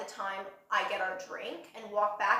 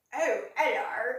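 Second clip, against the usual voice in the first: put-on, tried-out British accent; 2 semitones higher, 5 dB louder than usual. Retelling a guy at a bar saying hello: attempted british accent. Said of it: "he's, like, British, and he's like".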